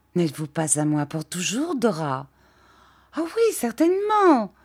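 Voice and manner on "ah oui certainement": crying out, very high-pitched. Dora answers the man asking whether she is his forever, crying out. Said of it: "cria Dora".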